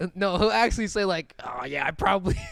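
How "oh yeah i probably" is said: put-on raspy politician voice, mocking. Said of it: "I like making fun of his voice".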